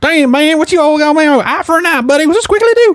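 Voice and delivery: very high, angry, put-on Florida accent.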